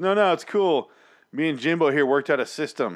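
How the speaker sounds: acted very loud, carrying voice. Telling a casino story, re-enacting a man's reply to Kitty, retelling a very loud remark. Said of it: "he says very loudly to Kitty".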